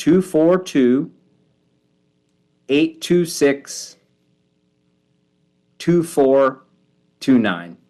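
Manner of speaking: slow, careful, unhurried, digit by digit. Giving out a partner college's phone number, speaking slowly. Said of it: "I say it slowly".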